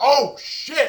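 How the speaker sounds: high, loud, excited yelling.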